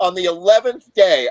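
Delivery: plain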